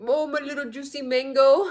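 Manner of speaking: put-on Indian English accent. Impersonating a man's newest line, Indian accent impression. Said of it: "I do it in an Indian accent".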